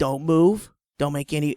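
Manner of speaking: ordinary talk, nothing marked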